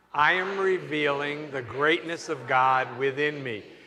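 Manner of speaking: wholehearted, slow, believing declaration with conviction. Leading an affirmation, saying it like you believe it. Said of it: "Now say it like you believe it".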